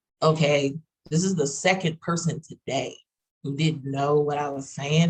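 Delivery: ordinary delivery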